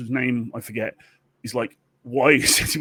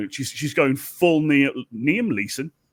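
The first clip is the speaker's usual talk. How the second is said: ordinary delivery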